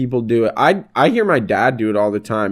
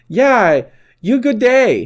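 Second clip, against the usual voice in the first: high, put-on broken English. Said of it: "he just talked like that to her".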